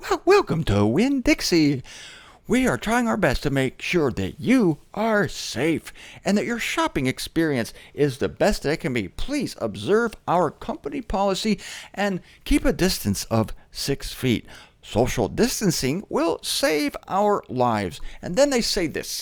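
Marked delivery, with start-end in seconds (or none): 0.0-18.0 sing-song store intercom announcer voice. Recalling a loudspeaker announcement at the grocery store, Winn-Dixie loudspeaker voice. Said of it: "they have this little grocery store voice".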